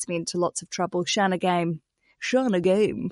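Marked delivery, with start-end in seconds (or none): 1.1-3.1 radio announcer voice. Host saying a guest's name properly, in a radio voice. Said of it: "that's my radio voice for you".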